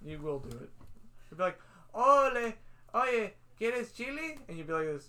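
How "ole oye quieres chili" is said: booming, very slow, drawn-out put-on Spanish accent. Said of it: "Why do you think I talk like that?".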